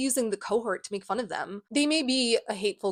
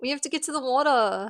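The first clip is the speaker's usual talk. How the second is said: bad put-on Australian accent; 5 semitones higher than usual. Joking about not being able to talk, in a bad fake australian accent. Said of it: "I'm Australian, mate".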